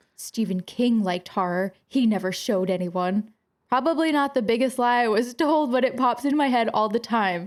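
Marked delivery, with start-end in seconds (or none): 0.2-3.3 mock, very serious, grave tone. Retelling what the principal said during an office meeting, mimicking her most serious tone. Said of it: "with the most serious tone".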